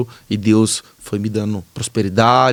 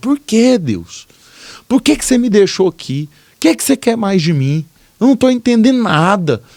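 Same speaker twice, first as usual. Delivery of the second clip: very high, furious, raging cry rising upward; 11 semitones higher, 5 dB louder than usual. Retelling punching the wall and crying out to God: retelling own shouting. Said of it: "eu comecei a gritar".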